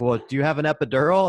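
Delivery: high, shouted, yelled-back retort. Retelling yelling back at a nurse across the street while running: imitating own yell. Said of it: "And I yell back".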